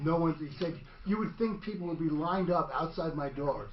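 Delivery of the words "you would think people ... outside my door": normal talking voice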